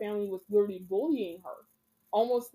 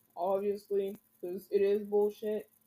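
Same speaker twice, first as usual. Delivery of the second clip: normal talking voice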